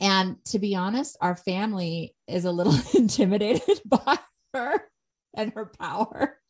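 speaking through laughter. Describing how the family feels about a loud daughter, laughing while talking. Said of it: "I don't mean to laugh".

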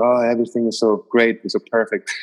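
ordinary talk

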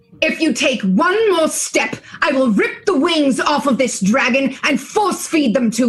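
mildly, lightly yelled, threatening tone. Playing a character threatening rowdy kobolds with a dagger: yelling threat in character. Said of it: "And she yells".

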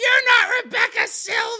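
acted, shrill, very high shrieked scream. Retelling a scene where a fan yells at a disguised author: imitating Mona screaming. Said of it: "just starts screaming".

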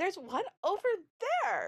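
very high, delighted, excited sing-song cry. Retelling a child's delighted line in a video: imitating an excited child. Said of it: "just as excited as a human can be".

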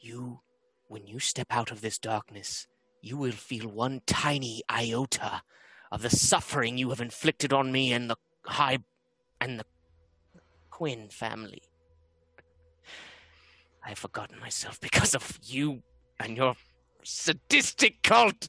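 soft whisper, very close. A player's character whispers in an enemy's ear before pushing them; whispering in someone's ear. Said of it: "and whispers in the ear".

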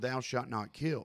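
ordinary talk

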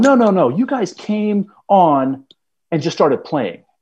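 put-on angry woman voice, high and swooping. Retelling how a woman stormed up accusing the golfers: imitating an angry woman. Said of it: "she comes storming up".

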